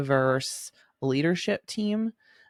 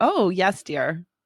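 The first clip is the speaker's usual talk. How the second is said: mocking, insincere, sarcastic compliant tone; 4 semitones higher, 4 dB louder than usual. Describing how they said it before, in an acted-out sarcastic tone. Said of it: "I've said it in a sarcastic way".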